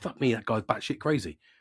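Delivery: plain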